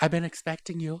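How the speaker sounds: small, effeminate put-on voice.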